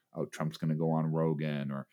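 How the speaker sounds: ordinary talk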